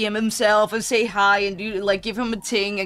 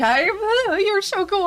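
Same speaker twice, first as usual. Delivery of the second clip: very high, swooping, stammering, starstruck put-on gush; 11 semitones higher than usual. Retelling a fan meeting him, imitating excited stuttering. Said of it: "he was having a full-on breakdown at this point".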